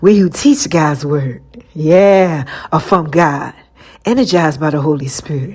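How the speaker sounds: sultry, seductive, sexy delivery. Reading a Bible verse aloud to the group, said real sexy. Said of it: "let me say it to y'all real sexy".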